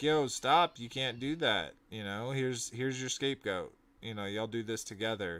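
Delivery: ordinary delivery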